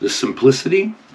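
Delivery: simplicity ending on an upturn. Reading a list aloud to show tone direction, rising pitch on simplicity. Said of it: "tone up".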